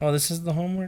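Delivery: deflated, let-down, disappointed tone. Hearing what the homework is, disappointed. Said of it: "You sound disappointed".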